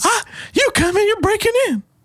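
very high-pitched cartoon old man voice. Retelling an arrested man's protest in the old guy from Family Guy voice. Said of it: "it's turning into the old guy from Family Guy".

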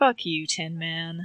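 slow, dragged-out groaning delivery. Voicing a character pinned under a robot: groaning. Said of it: "Saul just groans and is just like".

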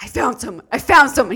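mock excited exclamation. Recalling a man running out to the alley; retelling an excited exclamation. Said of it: "He's, like, so excited".

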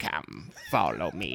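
low, sinister, evil voice. Retelling a story in which a voice speaks to him, evil voice. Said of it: "it's this evil voice".

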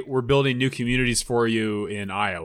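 ordinary talk

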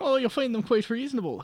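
put-on Irish accent. Narrator voicing a woman offering a room for the night, full Irish accent. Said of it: "let me go full Irish".

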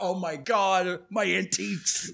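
fretful, worried woman's voice, very slow lament. Retelling a possessed woman's reaction, imitating a worried woman. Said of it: "she's worried about".

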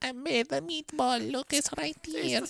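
put-on acted Italian grandmother voice. Imagining scientists in lab coats and a grandmother bringing a meatball: acting as an italian grandmother. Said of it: "an Italian grandmother in her apron comes out, she goes".

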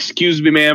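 oozing, dripping with charm. Playing a character leaning on a shop counter asking a clerk: oozing charm. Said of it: "lean on the counter and ooze all over the place".

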